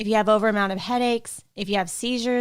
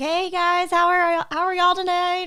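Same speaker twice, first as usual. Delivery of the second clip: bright, upbeat, pitched-up, cheery voice; 9 semitones higher than usual. Retelling how they usually greet people at work: imitating own happy greeting. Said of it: "usually I'm really happy".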